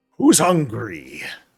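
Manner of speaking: huge, booming, very loud hall-filling call. A figure takes center stage before competitors and spectators in the plaza, booming voice. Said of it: "booming voice".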